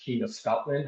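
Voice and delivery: ordinary talk, nothing marked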